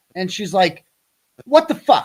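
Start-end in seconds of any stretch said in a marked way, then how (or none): 1.4-2.0 mock, very high, loud, furious angry outburst. Retelling how a source got mad at him: imitating someone angry. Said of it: "she got all mad at me".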